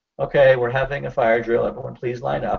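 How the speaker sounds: normal talking voice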